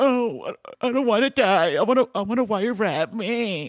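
very high, slow, drawn-out, acted blubbering cry. Act out a companion as the plane is going down, imitating Ryan crying. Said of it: "Ryan starts crying like a little bitch".

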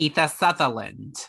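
motherly character voice.

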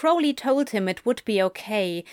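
plain reading voice

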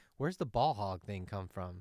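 ordinary talk

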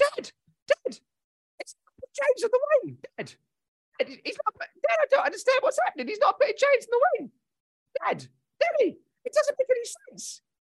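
put-on high-pitched child voice. Speaker doing an impression of a child talking to his dad, high-pitched child voice. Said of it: "It's a child, was the impression I was doing there".

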